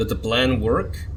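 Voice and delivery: ordinary talk, nothing marked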